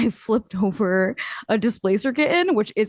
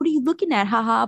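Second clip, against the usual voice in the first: teasing, playful, laughing it off. Showing how one would deflect while winning: funny, joking way. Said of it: "I'll do it in a way that's like".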